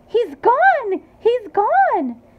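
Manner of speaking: very high, shrill, piercing, drawn-out scream. Mrs. teevy stares at the place where her son had been; screaming. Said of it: "and she screamed".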